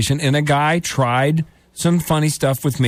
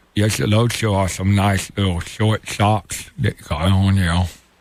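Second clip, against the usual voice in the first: very low, deep, creepy oddball voice; 8 semitones lower than usual. Retelling what a creepy neighbor said about short socks: Forrest Gump-sounding voice. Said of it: "whenever you do that guy, it sounds like Forrest Gump".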